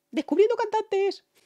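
very high, loud, excited shout.

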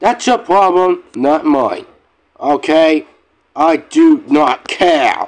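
angry, pissed-off snapping tone. Ranting to viewers about losing saved files: snapping angrily. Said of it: "I'm sorry if I snap at you guys".

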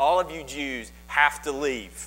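ordinary talk

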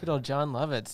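ordinary talk

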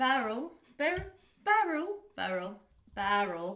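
British accent, slow. Saying the name aloud in a British accent. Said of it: "I wanna say it in a British accent".

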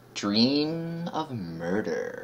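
slow, soft, ominous dramatic reading.

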